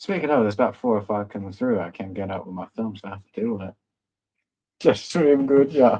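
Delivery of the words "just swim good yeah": bad, put-on Jamaican accent. Chatting casually, slipping into a put-on jamaican accent. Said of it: "I need to stop with the Jamaican accent".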